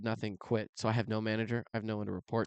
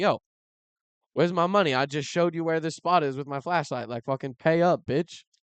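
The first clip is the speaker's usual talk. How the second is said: mock demanding voice, higher and louder; 6 semitones higher, 6 dB louder than usual. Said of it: "he's like".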